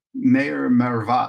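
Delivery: flat, deep monotone delivery. Retelling a man calling out to the mayor during a debate, flat deep tone. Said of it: "said it like in a in like a like a flat tone".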